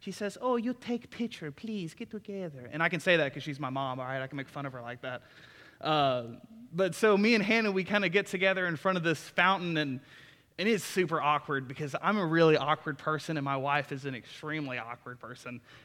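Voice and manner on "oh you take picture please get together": put-on Brazilian accent, high-pitched. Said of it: "this is why I say this in an accent".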